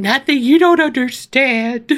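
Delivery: mock-tearful, imitated crying voice. Retelling her answer when Ethan asked what was wrong, imitating crying. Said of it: "I did cry all the time".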